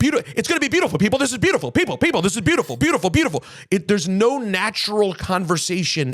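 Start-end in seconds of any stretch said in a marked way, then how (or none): 0.0-3.4 loud, upbeat, pitched-up hype-man shouting. Complaining about a host's loud delivery: loud upbeat Trevor Noah impression. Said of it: "Why are you so loud and upbeat?".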